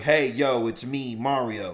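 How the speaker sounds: very slow, deliberate, every word stretched out. Retelling a video of an actor talking about his role: imitating Chris Pratt. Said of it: "video of Chris Pratt talking about it? He's like".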